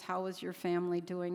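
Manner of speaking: ordinary talk, nothing marked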